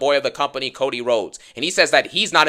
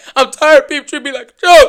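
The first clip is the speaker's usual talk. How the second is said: put-on very loud, high, near-tearful cry; 12 semitones higher, 10 dB louder than usual. Retelling a wrestler's promo line: imitating Solo Sikoa about to cry. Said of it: "He sounds like he's about to cry for a second".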